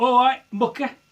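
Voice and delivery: high, loud, chummy matey tone. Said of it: "Or as I use".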